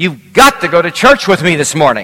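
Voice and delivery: loud, bombastic voice. Retelling what a man by a pickup said one morning, bombastic voice. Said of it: "he said with a bombastic voice".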